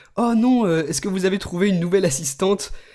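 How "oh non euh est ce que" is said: usual speaking voice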